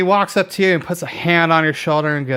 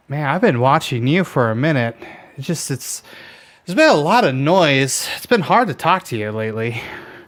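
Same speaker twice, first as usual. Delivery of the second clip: amused, talking through a chuckle. Voicing a smiling figure with a lute who greets Conrad, chuckling. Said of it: "he smiles and chuckles and, and goes".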